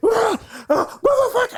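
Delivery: put-on very high, wild screaming outburst. Telling a story from work, the speaker acts out a man across the street screaming. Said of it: "he's just like screaming".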